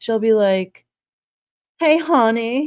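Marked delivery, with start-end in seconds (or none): 1.8-2.7 put-on pitched-up strong southern accent. Telling about a coworker, the speaker imitates her greeting in a southern accent. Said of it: "talking with like a very southern".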